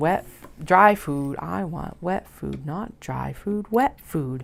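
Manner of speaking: put-on slow, annoying cat voice. Voicing the cat from the book Cat Problems at its food dish, annoying cat tone. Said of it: "in that annoying cat tone of like".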